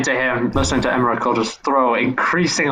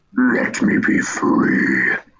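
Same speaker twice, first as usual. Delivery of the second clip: very deep, very slow, drawn-out gargoyle creature voice; 12 semitones lower than usual. Telling what the gargoyle says, in a gargoyle voice. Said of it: "in the gargoyle voice".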